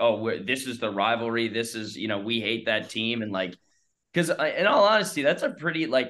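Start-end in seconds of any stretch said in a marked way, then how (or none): none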